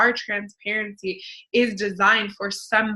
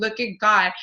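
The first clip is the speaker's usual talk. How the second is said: mock bawling, tearful, sobbing. Retelling finding a check while live: retelling own crying. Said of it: "literally bawling, crying".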